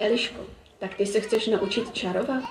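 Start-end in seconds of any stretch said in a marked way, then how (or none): none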